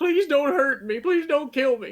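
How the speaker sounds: very high, shrill, sobbing, pleading scream. A game master voicing a character questioned by the adventurers, screaming and crying, pleading. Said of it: "He's like screaming and crying now".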